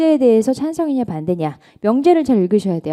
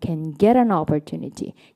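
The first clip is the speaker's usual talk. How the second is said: can said fast, stress on get; 6 semitones lower, 5 dB quieter than usual. English speaking lesson given in Korean: quick can, stress on get. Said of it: "can을 빨리 가셔야죠... 항상 본동사의 강세 넣어주시고요".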